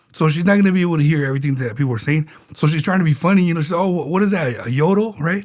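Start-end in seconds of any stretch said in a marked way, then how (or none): none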